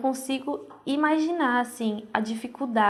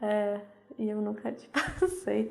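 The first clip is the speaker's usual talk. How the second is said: speech broken up by nervous laughter; 5 dB quieter than usual. Telling how her mother had the family's contact all along: nervous laughter while talking. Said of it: "eu tô rindo de nervoso".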